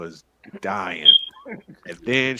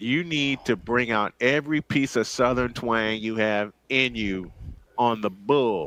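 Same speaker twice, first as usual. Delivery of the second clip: ordinary talk, nothing marked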